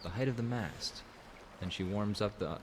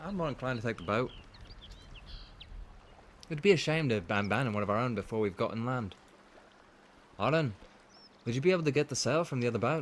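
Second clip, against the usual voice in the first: put-on clumsy, failing Irish accent; 4 semitones higher, 4 dB louder than usual. Voicing a character's lines while playing: bad Irish accent. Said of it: "I apologize to anyone who's Irish for my Irish accent".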